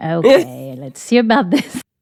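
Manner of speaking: sarcastic, doubtful, wide-ranging pitch, French me.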